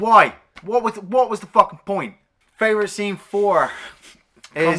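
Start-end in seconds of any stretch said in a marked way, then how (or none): 0.0-2.2 agitated, much higher and louder. Talking about a film scene they just remembered, getting worked up. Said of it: "calm down".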